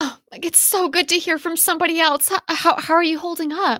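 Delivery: sounding distressed. Playing Clara, greeting a neighbor heard over a radio, distressed voice. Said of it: "You sound like you're in distress".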